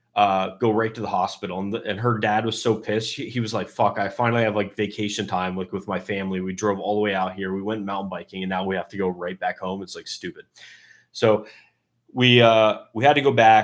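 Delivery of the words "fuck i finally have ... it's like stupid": ordinary delivery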